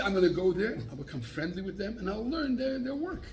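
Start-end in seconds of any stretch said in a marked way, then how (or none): none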